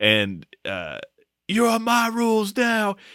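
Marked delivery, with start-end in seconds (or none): 1.5-3.0 mock, very high screamed wrestling promo voice. Retelling a wrestling promo, imitating someone screaming. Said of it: "while they're screaming".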